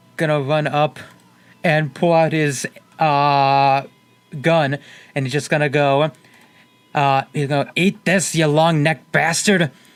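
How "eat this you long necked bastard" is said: put-on slight hint of Irish accent. Voicing a character who pulls a gun on a creature: slight irish accent. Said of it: "I went a little Irish for a second there".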